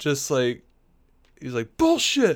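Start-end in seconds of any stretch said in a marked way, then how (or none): 1.8-2.4 put-on screamed outburst, higher and louder. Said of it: "he's just screaming at Dick".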